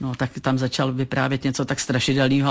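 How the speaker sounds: normal talking voice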